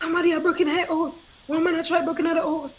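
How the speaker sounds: high, fast, panicked, alarmed cry.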